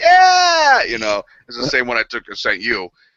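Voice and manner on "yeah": high, loud, cheesy whooping cheer. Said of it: "a selfie with a big smile".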